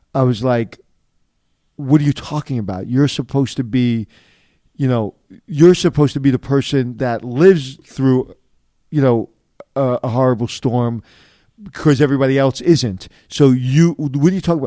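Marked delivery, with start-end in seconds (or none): none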